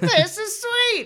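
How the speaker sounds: very high-pitched cartoon villain voice. Co-hosts joke about proclaiming things; one proclaims it in a Skeletor voice.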